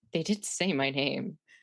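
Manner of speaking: hushed whisper to oneself. Whispering to oneself in character after being announced by the wrong name: whispering to oneself. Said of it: "I would just whisper to myself".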